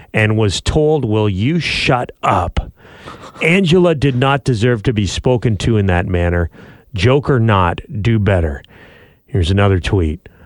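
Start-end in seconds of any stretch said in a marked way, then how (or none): none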